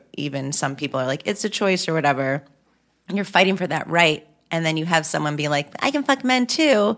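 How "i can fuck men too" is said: mocking, pitched-up drawl. Quoting someone the speaker describes, in a mocking bisexual voice. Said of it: "mocking bisexual voice".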